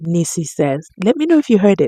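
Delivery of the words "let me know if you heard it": muttering under breath. Retelling what a lawyer said in court: imitating muttering under breath. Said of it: "under his breath".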